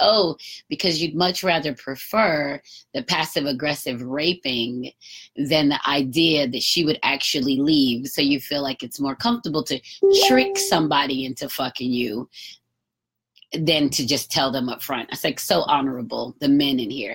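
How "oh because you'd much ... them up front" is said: ordinary delivery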